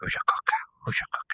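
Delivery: soft, hushed whisper.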